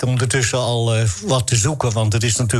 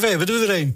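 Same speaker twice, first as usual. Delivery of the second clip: put-on words laughed out, high and laughing; 8 semitones higher than usual. Retelling what someone said as he came in, imitating someone laughing while talking. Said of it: "al lachend binnen en zei".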